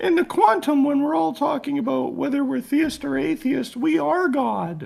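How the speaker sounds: very high, froggy puppet voice. Acting out a man asked whether he is theist or atheist, use a Kermit the Frog voice. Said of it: "in his Kermit the Frog voice".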